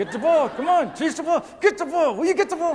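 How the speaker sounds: through clenched teeth. Retelling what the speaker told Jared during a game, retelling talking through teeth. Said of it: "so I have to talk through my teeth".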